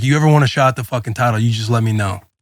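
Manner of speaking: play-acted menacing, threatening tone. Retelling how dad stood over him in his face: imitating dad threatening. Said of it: "he's like".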